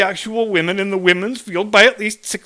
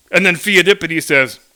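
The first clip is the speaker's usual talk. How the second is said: normal talking voice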